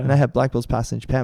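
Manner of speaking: normal talking voice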